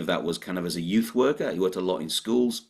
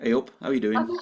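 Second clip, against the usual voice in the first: mock friendly, imitated friendly tone; 3 semitones higher than usual. Telling Barbara about her podcast's opening: imitating Barbara's friendly greeting. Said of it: "and yours is just like".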